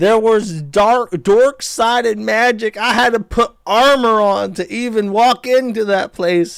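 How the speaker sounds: play-acted sobbing scream, high, loud and drawn-out. Retelling what a woman from an old tv clip said: imitating someone crying and screaming. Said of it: "she's, like, crying. She's like".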